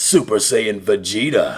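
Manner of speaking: very low, proud, regal prince voice. Showing off the voices they can talk like: Vegeta voice. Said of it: "I can talk like the Prince of All Saiyans".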